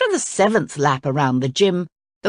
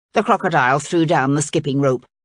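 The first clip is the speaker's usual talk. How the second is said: ordinary delivery, nothing marked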